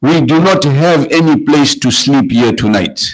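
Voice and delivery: plain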